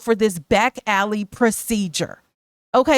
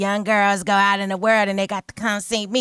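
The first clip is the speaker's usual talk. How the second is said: put-on raspy voice; 2 semitones lower than usual. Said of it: "[name] talks with that raspy voice".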